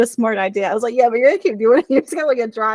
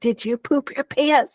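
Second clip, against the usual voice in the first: put-on loud, failed whisper in Irish accent, trying quiet; 3 semitones higher than usual. Retelling what he asked about a stranger, imitating a too-loud whisper. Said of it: "it's so far from a whisper".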